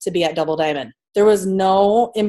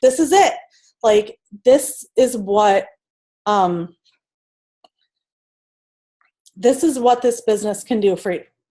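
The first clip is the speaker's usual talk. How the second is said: voice catching, choked up with emotion; 3 semitones higher than usual. Encouraging people on a Zoom call about their goals: getting emotional. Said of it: "I'm getting emotional right now".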